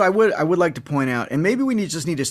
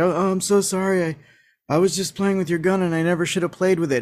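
put-on, apologetic cartoon voice; 3 semitones higher than usual. Retelling the heavy-handed ending, imitating Broadway's mock apology. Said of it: "Broadway's like".

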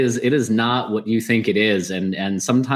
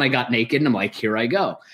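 ordinary talk

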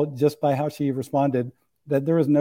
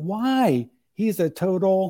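high, pitched-up loud outcry; 5 semitones higher than usual. Recounting a woman's dream, voicing her answer about her ex-husband: retelling a shout. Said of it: "And she shouts out".

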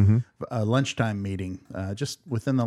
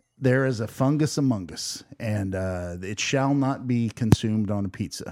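normal talking voice

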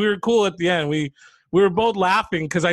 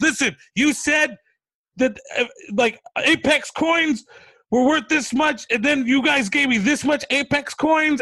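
acted-out, put-on yelling; 8 semitones higher than usual. Retelling an argument with a guy over Apex coin money, retelling their own yelling. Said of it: "and I'm yelling".

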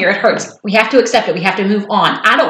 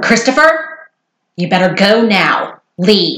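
deep voice, slow, drawn-out delivery. Retelling a scene where Emily tells Christopher to leave; deeper Emily voice. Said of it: "Let me do my Emily voice".

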